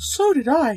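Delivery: quavering, unsteady voice. Miss Gorman answers the narrator: in a trembling voice. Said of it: "said Miss Gorman in a trembling voice".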